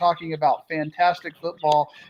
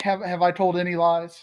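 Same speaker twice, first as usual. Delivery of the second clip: usual speaking voice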